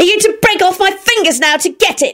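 shrill screech, very high-pitched. Narrating Rosie, pinned beneath William while clutching the turner, screeching at him. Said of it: "she screeched".

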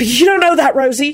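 panicking voice. Reading a tense story scene, one character answers another in a panic-stricken voice. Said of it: "Jamie said in a panic-stricken voice".

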